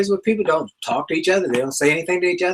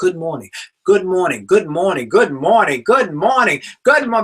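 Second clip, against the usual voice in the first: enthusiasm and energy building with every repetition; 3 dB louder than usual. Demonstrating a greeting repeated every day, with building energy and enthusiasm. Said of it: "I'm saying it with energy and enthusiasm".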